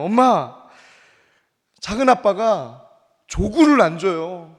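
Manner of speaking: mock slow crying little child, pleading tone. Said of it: "막 울면서 얘기를 하는 거예요".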